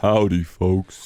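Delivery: deepest, lowest voice. Answering a request to talk in the deepest voice: deepest voice. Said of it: "Should we do a podcast in our deepest voices?".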